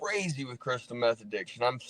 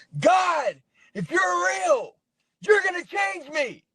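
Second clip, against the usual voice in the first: mock very high-pitched, loud, drawn-out yell; 5 dB louder than usual. Retelling yelling at God in prayer: retelling own yelling. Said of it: "Yelling at God".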